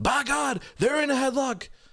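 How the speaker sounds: very high, top-of-the-lungs screaming commentator voice. Acting out a man who shouts at all hours about someone in a headlock, imitating his screaming. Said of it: "he's screaming".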